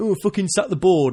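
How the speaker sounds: overwrought, hysterical, histrionic, angry outburst. Mocking people who want the board sacked: imitating mad histrionic fans. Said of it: "them mad histrionic people that are saying".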